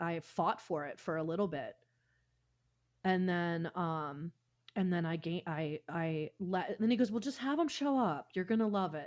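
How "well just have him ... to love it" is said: put-on Southern accent, higher. Retelling what the producer said about the guitar player: imitating a Southern accent. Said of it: "in his Southern accent".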